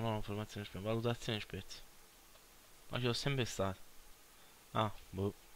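quiet murmuring.

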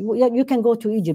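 snide, mocking, sarcastic throwaway tone. Retelling someone's reply to people asking where to go, imitating sarcasm. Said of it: "somebody like sarcastic says".

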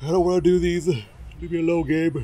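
speaking through a yawn. Starting a late recording session, the speaker is yawning while talking. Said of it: "Excuse the yawning".

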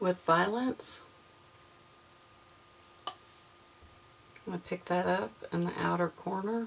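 soft whispering. Narrating a makeup tutorial in the morning, whispering. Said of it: "I don't know why I'm whispering this morning".

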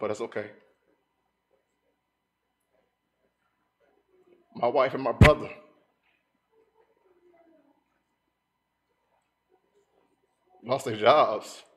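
close to tears, emotional, swooping tearful voice. Speaker sharing personal news with listeners, getting a little emotional. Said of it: "I might get a little emotional".

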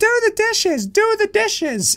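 very high, whiny, nagging voice. Speaker opening cards, following a prompt, in a whiny voice. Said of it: "In whiny voice".

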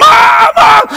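shrill, very high, loud, desperate, frantic scream. Retelling a childhood memory of fleeing, calling out to a parent, retelling a scream. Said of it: "run screaming back to our yard".

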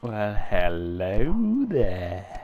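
booming, deep, eerie voice, "hello" stretched out long. After announcing the creepy voice, answering a radio call in a creepy voice. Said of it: "And now creepy voice".

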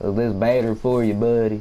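put-on little country voice with country accent. Switching voice so a country listener can understand, little country voice. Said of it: "I'ma talk in my little country voice".

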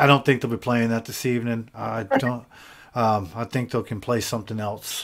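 ordinary talk

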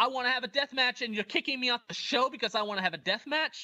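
heated, insistent, aggrieved tone. Retelling how a wrestler confronted a promoter at a press conference: imitating someone yelling. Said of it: "he starts yelling at Ganosuke".

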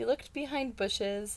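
ordinary delivery

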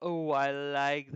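heavy sarcasm, very loud and very slow. Reviewing an investment offer's payout table, the speaker reacts in a sarcastic tone. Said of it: "If you can hear some sarcasm in my voice".

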